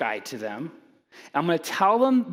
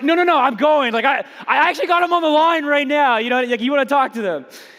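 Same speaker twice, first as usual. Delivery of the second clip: put-on assertive, brash tough-guy bluster; 8 semitones higher, 8 dB louder than usual. Retelling his own words to the lady on the call, mock tough-guy assertive. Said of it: "I'm like".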